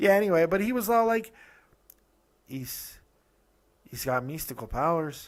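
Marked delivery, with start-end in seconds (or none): 2.5-5.3 put-on Mexican accent. Retelling what a man said, quoting him in a put-on mexican accent. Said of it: "No, that's even worse".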